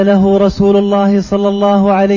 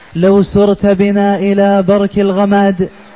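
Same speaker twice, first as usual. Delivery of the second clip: normal talking voice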